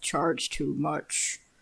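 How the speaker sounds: quietly muttered under the breath. Voicing a character commenting on a price: under his breath. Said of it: "Lurk says under his breath".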